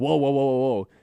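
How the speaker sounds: alarmed, panicked, freaked-out string of exclamations. Retelling a mountain biker meeting a bear, imitating freaking out. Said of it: "he like freaks out".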